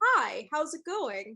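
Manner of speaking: put-on voice, slow, stretched-out, easy and casual. Doing an impression of Tyler for the others: Tyler impression. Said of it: "I wanna do my Tyler impression".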